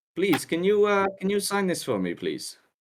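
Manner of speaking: very high, rushed, swooping voice, rattled off quickly. Voicing a visiting fan who asks the party to sign paper: voicing J P Bernat. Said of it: "I say he hands it to".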